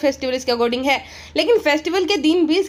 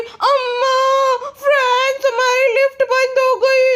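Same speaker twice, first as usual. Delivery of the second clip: put-on very high, slow, grating, irritating baby voice; 10 semitones higher, 3 dB louder than usual. Retelling how a woman spoke in her recorded video, in an irritating baby voice. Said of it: "irritating baby voice में".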